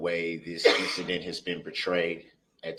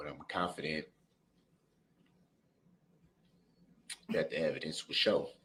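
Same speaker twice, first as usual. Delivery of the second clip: voice full of emotion, quieter; 5 dB quieter than usual. Speaking about families still healing, getting emotional. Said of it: "I'm getting a little emotional".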